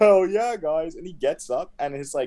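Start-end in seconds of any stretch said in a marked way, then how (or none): 0.0-0.9 giggling, giggly, pitched-up, cheerful voice. Retelling how Leo reacted after sliding forty feet, imitating Leo giggling. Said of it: "he's like giggling like".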